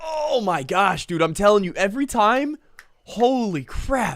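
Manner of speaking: excited disbelief, high and loud.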